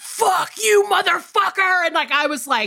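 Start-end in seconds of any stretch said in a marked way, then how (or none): 0.0-1.8 acted terrified, rough, high-pitched scream. Recounting a terrifying moment, retelling own scream. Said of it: "I screamed".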